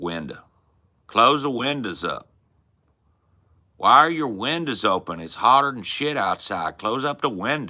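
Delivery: Arkansas way of talking. Showing how you say window to the others, in an Arkansas accent. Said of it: "we're talking like Arkansas accent now".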